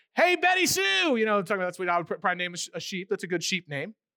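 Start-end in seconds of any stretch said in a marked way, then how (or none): 0.2-1.2 high, slow, loud call across distance. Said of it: "when the shepherd goes".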